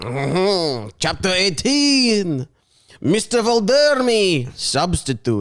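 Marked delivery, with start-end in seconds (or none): 1.0-5.4 slow put-on French accent drifting into Russian, Eastern European. Reading this week's chapter title aloud, in a put-on french accent. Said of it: "I'm going to read it in a French accent".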